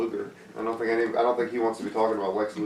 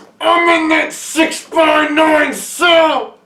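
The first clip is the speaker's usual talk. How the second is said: put-on menacing wrestler voice, higher and louder; 12 dB louder than usual. Doing the requested impression of Nails threatening with a nightstick: Nails impression. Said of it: "your Nails impression".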